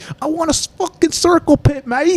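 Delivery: put-on high, drawn-out, drawling British accent. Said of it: "[name] in his little, uh, British, uh, accent's always like".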